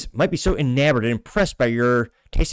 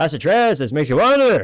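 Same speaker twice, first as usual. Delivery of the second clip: put-on deadpan comedian voice, higher pitched; 4 semitones higher, 4 dB louder than usual. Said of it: "butcher Norm Macdonald's accent".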